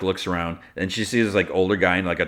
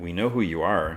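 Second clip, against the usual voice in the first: usual speaking voice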